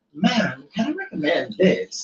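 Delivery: soft, polite barista voice. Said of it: "in her Starbucks voice".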